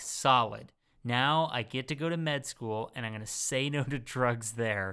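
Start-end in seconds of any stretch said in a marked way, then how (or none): none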